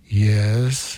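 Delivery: deep put-on voice. Retelling a priest answering a child at first penance, deep voice. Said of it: "I hear this deep voice go".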